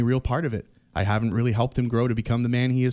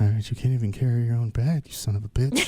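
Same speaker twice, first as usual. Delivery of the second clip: weak, frail, feeble, raspy voice. Mocking a debate line as President Joe Biden: feeble Joe Biden impression. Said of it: "It sounds very feeble. He's like".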